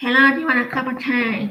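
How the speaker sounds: put-on croaky, robotic American voice. Asking why some americans talk like a robot, imitating a robotic american voice. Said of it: "When they talk like they got a croaky voice".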